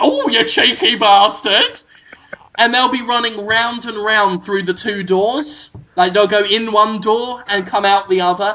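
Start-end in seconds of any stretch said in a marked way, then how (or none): 0.0-1.8 put-on old Wild West American cowboy accent. Acting out a woman in a saloon fleeing a cowboy: Wild West accent. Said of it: "in that kind of Wild West accent".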